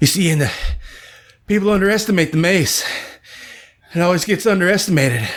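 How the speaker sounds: put-on breathless, out-of-breath speech. Retelling a stranger's talk at a Renaissance fair, imitating someone out of breath. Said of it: "he's all out of breath".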